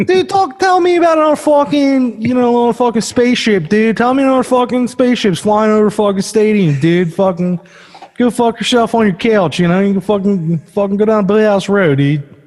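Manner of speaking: put-on Philadelphia accent. Speaker does a bit about what angers them paranormally, cursing in a Philadelphia accent. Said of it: "cursing in a Philadelphia accent".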